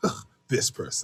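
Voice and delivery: dismissive, breathy, whispered scoff. Imitating the other speaker's reaction to a text: imitating a scoff. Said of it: "you were like".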